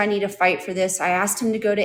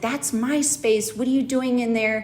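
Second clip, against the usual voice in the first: mock-angry outburst; 4 semitones higher than usual. Telling how he reacted when confronted about hidden cans, imitating an angry outburst. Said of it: "he got so angry".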